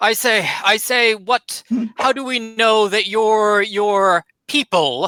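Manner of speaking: put-on slurred drunk speech. Game master voicing a supporter who has drunk too much ale, drunk slurring. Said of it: "he's just kind of slurs out".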